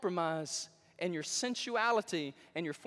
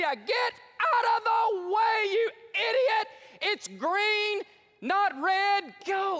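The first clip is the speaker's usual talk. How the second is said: mock furious shouting, loud, very slow and drawn-out; 13 semitones higher, 7 dB louder than usual. Retelling a driver shouting at a stopped car at a green light: retelling an angry shout. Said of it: "He starts shouting at that lady".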